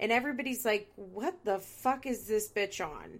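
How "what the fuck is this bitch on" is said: mock baffled, confused tone. Retelling everybody's reaction to a woman screaming, mock-confused reaction. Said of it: "Everybody is so confused".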